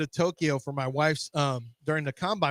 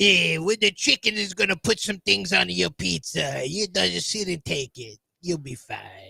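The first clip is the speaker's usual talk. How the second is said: put-on Italian accent all the way through; 3 semitones higher than usual. Bantering with another speaker who calls it out, speaking in an Italian accent. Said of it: "Doing an Italian accent".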